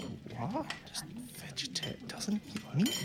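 hushed whisper, muttered off to one side. Voicing a dinner host's aside to Volo about a guest: muttered aside. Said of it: "he kind of has an aside to Volo".

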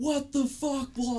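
very high, shrill scream. Retelling how a husband reacted after backing into the speaker's car; imitating husband screaming. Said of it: "he starts screaming at me".

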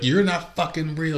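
imitated high screaming. Retelling a woman on edibles pointing at someone, imitating her screaming. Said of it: "She was screaming".

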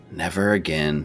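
muttered under the breath. Narrator voicing a woman who shakes her head and returns to dishes, muttered under her breath. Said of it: "under her breath".

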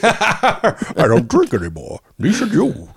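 very high, slow, drawn-out, swooping sing-song voice. Repeating the line after being told it sounded like Bane: Bane voice. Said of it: "sounded like Bane".

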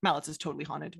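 flat, deadpan delivery. Quoting what a long-serving full-timer said to them: repeating a deadpan remark. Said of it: "said very deadpan to me".

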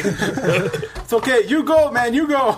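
put-on high Italian accent. Joking about a man who likes carrying other people's wives, in a Mario accent. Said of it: "What accent is this? I don't know. It's a Mario".

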